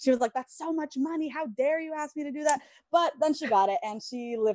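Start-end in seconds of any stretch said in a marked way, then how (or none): 0.3-2.6 acted, indignant, angry scolding mother voice, pitched up. Retelling mom's reaction to a request for a TV channel, imitating mom being mad. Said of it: "my mom was so mad at me".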